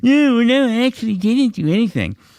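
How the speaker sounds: play-acted very high, cowardly, mocking baby voice. Mocking the other speaker's denial in an argument: mocking a cowardly baby. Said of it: "little fucking baby coward about it. Like".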